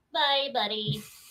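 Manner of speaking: put-on cartoon penguin voice. Speaker showing off the character voices they can do, penguin voice from Elf. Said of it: "And then and then the penguin".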